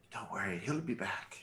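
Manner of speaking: hushed, private, half-whispered aside. Leaning in to tell Eslov out of earshot: half-whispering in character.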